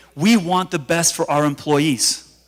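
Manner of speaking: ordinary talk, nothing marked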